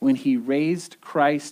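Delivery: plain reading voice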